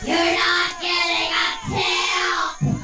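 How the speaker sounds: very high-pitched, rasping, raspy voice. Narrator voices a Karen in the labyrinth proclaiming, in a raspy voice. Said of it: "proclaims in a raspy voice".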